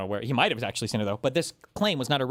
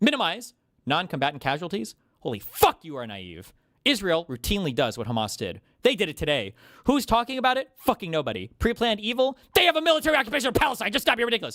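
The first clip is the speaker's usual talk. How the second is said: put-on very high, shrill, rising unhinged rant; 9 semitones higher than usual. Reading an opponent's tweets aloud to mock him: mocking unhinged Professor Dave voice. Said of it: "anybody's unhinged when you read their tweets in that voice".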